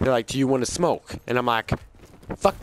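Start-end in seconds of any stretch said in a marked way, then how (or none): 0.3-1.1 acted-out serious-sounding voice. Recounting how the guys surrounding them asked again, retelling a more serious voice. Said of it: "except with a more serious voice".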